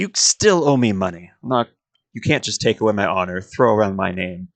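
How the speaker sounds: pouting, sulky tone. Voicing a character who has just lost an arm wrestle: pouting. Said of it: "she actually pouts".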